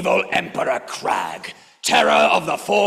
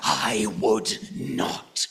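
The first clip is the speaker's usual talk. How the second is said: menacing, very low, soft, dangerously quiet voice; 9 semitones lower, 8 dB quieter than usual. The master answers a nervous offer of help, dangerously quiet. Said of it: "in a dangerously quiet voice".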